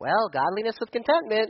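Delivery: high, squeaky cartoon voice. Imagining his grandma saying a churchy phrase: Smurf voice. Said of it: "she wouldn't say it like that because my grandmother didn't sound like a Smurf".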